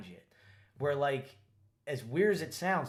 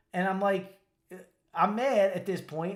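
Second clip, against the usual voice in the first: normal talking voice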